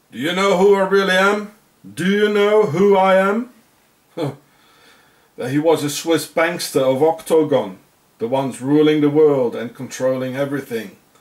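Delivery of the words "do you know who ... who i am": mock menacing, insistent, threatening, pitched up. Speaker acts out a man questioning an agent, retelling a threatening question. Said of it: "with a threatening tone".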